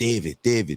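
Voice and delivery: put-on thick German accent, high-pitched. Retelling what a German woman said to the speaker, in a German accent impression. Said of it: "I can't walk in her accent".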